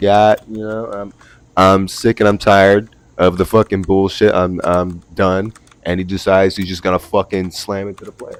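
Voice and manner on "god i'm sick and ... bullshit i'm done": usual speaking voice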